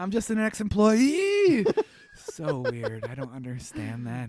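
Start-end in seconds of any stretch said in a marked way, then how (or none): 0.0-1.7 pitch climbing at the end of employee, upspeak. Copying how someone says a phrase, upspeak on employee. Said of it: "What's with the upspeak on employee and back pay?".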